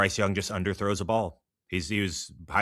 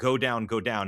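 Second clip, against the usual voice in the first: mock coach voice, screaming; 2 semitones higher than usual. Retelling a coach screaming while running beside a player: imitating Kirby Smart screaming.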